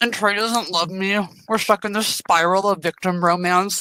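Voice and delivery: talking through a mouthful, chewing the words. Venting about online attacks while eating, talking with mouth full. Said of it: "Did you just put a bite into your mouth mid sentence?".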